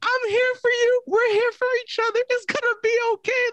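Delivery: acted tearful voice. Retelling how the crying girls comforted each other: imitating crying girls.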